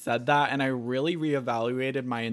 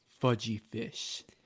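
put-on Boston accent; 2 semitones lower, 5 dB quieter than usual. Retelling what a lady once said, imitating a boston accent. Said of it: "The Boston accent lady said fudgy fish".

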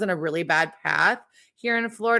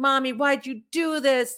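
put-on high, weepy, sobbing little child's voice; 8 semitones higher than usual. Retelling a young son's reaction to his mother, imitating a child crying. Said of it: "was like crying".

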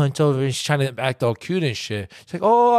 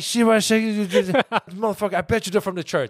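acted, high, pissed-off angry dad-voice rant; 6 semitones higher than usual. Retelling a pissed dad's reaction to someone parking in their spot: imitating an angry dad. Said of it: "My dad is pissed".

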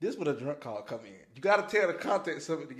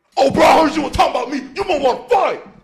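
very loud, high, hot-headed, enraged rant; 13 semitones higher, 17 dB louder than usual. Retelling a call from someone who wanted to fight; imitating an enraged caller. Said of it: "Somebody was so hot they called me".

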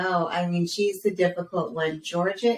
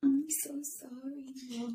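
put-on very soft, tiny little-girl voice, sorry tone; 8 semitones higher, 9 dB quieter than usual. Describing scolding a tiny girl who then apologizes, imitating a tiny child's voice. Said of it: "And she's like".

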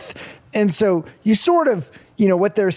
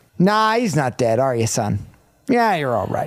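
put-on, totally uncaring tone in a low voice; 5 semitones lower than usual. Retelling what his dad said, standing over him with the family: imitating a totally uncaring tone. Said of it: "in the most like uncaring tone".

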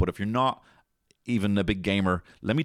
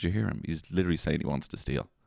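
put-on deadpan delivery, quieter than surrounding speech; 4 semitones lower, 5 dB quieter than usual. Retelling how a woman reacted to him, imitating a deadpan remark. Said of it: "She was looking at me like deadpan".

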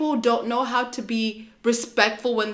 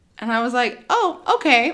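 ordinary delivery

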